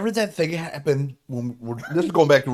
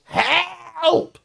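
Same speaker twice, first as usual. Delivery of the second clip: mock parrot yell, distressed woman sound, higher; 3 dB louder than usual. Retelling a parrot yelling at night: imitating a parrot yelling like a woman in trouble. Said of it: "would yell".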